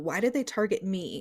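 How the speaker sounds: ordinary talk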